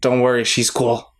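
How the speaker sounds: hushed whisper. Speaking in character, whispering reassurance up to another character: whispering. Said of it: "I whisper up to her".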